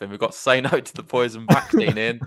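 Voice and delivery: loud, chuckling, laughing through the words. Reading out a viewer's message while laughing while talking. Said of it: "I'm just laughing".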